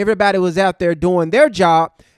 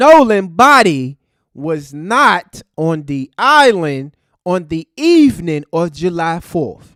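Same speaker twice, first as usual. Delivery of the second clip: slow, emphatic, deliberate, spelled out word by word. Repeating a point for the idiots in the back, said slow. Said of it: "I'm gonna try to say it slow".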